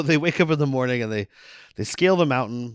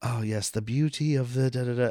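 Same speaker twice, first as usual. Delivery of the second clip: put-on soft, light British accent; 4 dB quieter than usual. Retelling a movie role played with a much lighter voice: imitating Daniel Day-Lewis's lighter voice. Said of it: "he's doing, like, a much lighter, like, he's a dressmaker".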